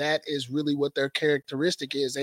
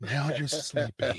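put-on soothing meditation voice, quieter; 6 dB quieter than usual. Picturing a friend recording a meditation tape: imitating Harrison on a meditation tape. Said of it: "put stuff on tapes where you're meditating".

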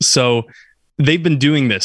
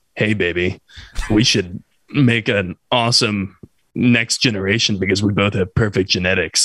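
mock creepy voice, lower; 4 semitones lower than usual. Imitating a creepy guy at a bar hitting on someone: mock creepy pickup line. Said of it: "the really creepy dude at the bar who's, like, hitting on you".

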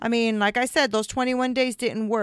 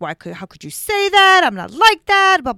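acted yelling, much higher and louder; 8 semitones higher, 8 dB louder than usual. Recounting an argument, acting out how they yelled at him: retelling a yell. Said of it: "I started like yelling at him".

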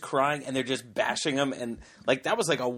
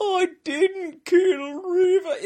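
put-on crying voice, much higher pitch, slower; 7 dB louder than usual. Retelling a trial, the speaker quotes the defendant, imitating Pistorius's weird crying. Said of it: "The weirdest cry voice".

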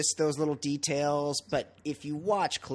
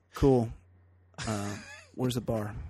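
deadpan, bored, unimpressed, low monotone; 4 semitones lower than usual. Doing an impression of every guy ever in a hotel: unimpressed hotel guest impression. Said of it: "Here's my impression of every guy that's ever been in any hotel".

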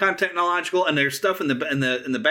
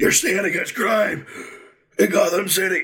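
disguised, masked voice with audible breathing through it; 2 semitones higher than usual. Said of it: "the voice thing he did".

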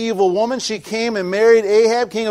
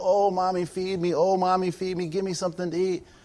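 put-on weepy, whimpering, pleading child voice; 3 semitones lower, 10 dB quieter than usual. Picturing a starving child begging a mother for food: acting a crying child begging. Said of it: "imagine your kid crying".

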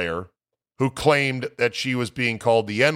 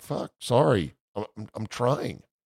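put-on slow, forlorn, dejected young-sounding voice; 4 dB quieter than usual. Retelling a kid being screamed at, imitating a forlorn kid. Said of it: "the kid looked forlorn like".

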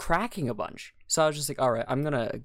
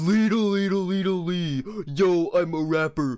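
put-on dopey cartoon voice, higher pitch; 5 semitones higher, 4 dB louder than usual. Imitating another speaker's deepened voice: Patrick from SpongeBob voice. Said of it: "You sounded like Patrick from SpongeBob".

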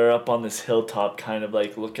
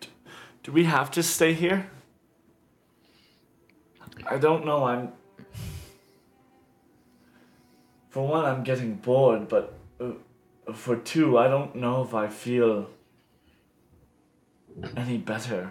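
disappointed character voice; 2 semitones higher than usual. Voicing a character asking if they must stay: disappointed character voice. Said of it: "looks in disappointment".

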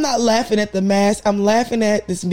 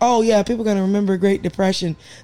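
ordinary delivery

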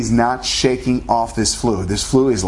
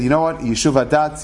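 normal talking voice

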